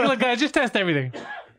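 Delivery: high, laughing, mocking offhand voice.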